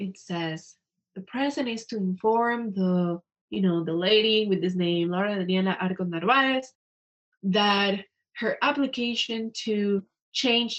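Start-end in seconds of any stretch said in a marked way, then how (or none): none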